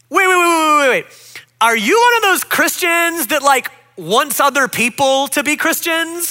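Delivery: mock loud voice. Speaker retells a woman on the bus pressing them again, imitating a louder voice. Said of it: "In an even louder voice".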